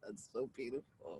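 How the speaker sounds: very quiet, very low, deeply moved murmur. Listener reacting to another speaker's story about a best friend, getting a little emotional. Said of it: "I'm getting a little emotional".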